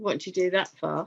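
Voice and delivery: put-on snide, sarcastic teenage tone. Retelling what the teenage son said after the foot injury: imitating a sarcastic teenage tone. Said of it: "the sarcastic tone that we get".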